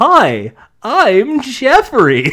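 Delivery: loud, high, bouncy, weirdly upbeat sing-song voice. Imitating a skeleton character from a game: weird optimistic Jeffrey voice. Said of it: "weird, optimistic voice".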